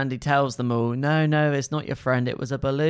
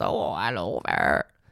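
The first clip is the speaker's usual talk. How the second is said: very low, put-on, silly storybook character voice; 8 semitones lower than usual. Speaker showing they could narrate doing all the little voices: little character voice. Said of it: "who speaks like that?".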